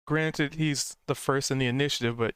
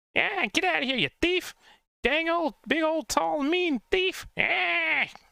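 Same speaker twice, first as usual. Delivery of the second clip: very high, shouting goblin voice. Voicing a goblin who yells at you, trying to be intimidating: goblin yelling intimidatingly. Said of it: "He's gonna yell at you".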